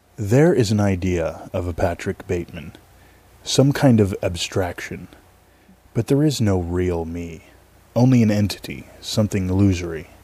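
low, dropped movie-monologue voice. Asked to do a line, performing a movie monologue: Patrick Bateman impression. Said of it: "that's from Batman Two".

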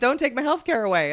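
ordinary talk, nothing marked

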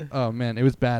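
ordinary talk

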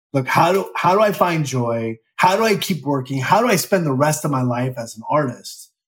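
plain

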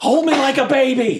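very high, shrill shout. Playing a game, the speaker calls out to someone flying around them, yelling. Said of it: "I just yell".

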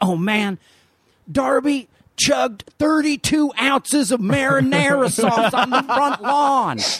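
very high, light, slow, slight Kentucky drawl. Retelling a college roommate's exaggerated story: imitating Hank's slight Kentucky accent. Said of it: "of a Kentucky accent".

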